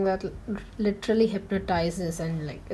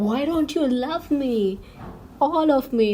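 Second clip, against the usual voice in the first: shrill, loud scream in a possessed demon voice; 7 semitones higher, 5 dB louder than usual. Recapping a show scene where a character screams at another, imitating a demonic scream. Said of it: "she just screams in a demonic voice".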